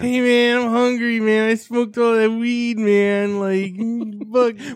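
put-on stoner guy voice, loud and high. Joking about a stoner craving McDonald's, stoner voice. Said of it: "Why is that the stoner voice?".

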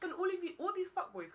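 high-pitched shooing call.

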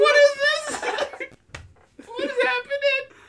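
high, screaming cry. Retelling a toilet emergency, imitating own past screaming. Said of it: "I was screaming".

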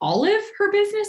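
high, wide-pitched, confused-sounding voice.

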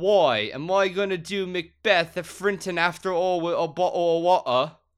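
put-on belted, high Cockney accent. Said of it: "you get to be his agent".

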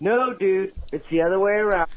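usual speaking voice

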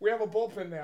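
laughing through the line, can't keep straight face. Trying to read a scripted line seriously: laughing while talking. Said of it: "I can't say it seriously".

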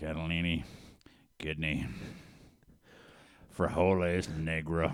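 very deep put-on voice. Retelling a coworker's roll call of beans: very low Sling Blade-like voice. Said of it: "he talked like they had a very low voice, kinda like Sling Blade".

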